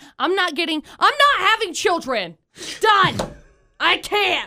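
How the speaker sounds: mad, getting heated. Complaining that even the dogs prefer someone else: mad and heated. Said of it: "I'm mad".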